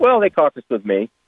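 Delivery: playful teasing. An interviewee answers the interviewer's question about caucusing with Republicans: teasing. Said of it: "I'm teasing you".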